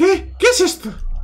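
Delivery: very high-pitched voice.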